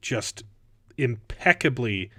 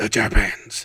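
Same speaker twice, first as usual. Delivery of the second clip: raspy put-on character voice, much lower; 3 semitones lower, 5 dB louder than usual. Trying out someone's voice while chatting, in a raspy character voice. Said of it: "his voice ... He's got it's more raspy".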